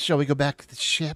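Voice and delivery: quick, hushed whisper spoken fast. The narrator voices the player's companion asking to head back, whispering. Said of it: "He whispers to you".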